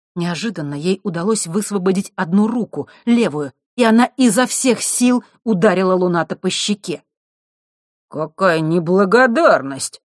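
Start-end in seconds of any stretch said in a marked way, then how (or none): 8.1-9.9 speaking in surprise, astonished. Alex, just slapped across the cheek by the girl, speaks surprised. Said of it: "с удивлением произнес Алекс".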